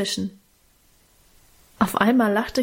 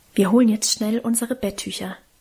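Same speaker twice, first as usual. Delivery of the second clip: usual speaking voice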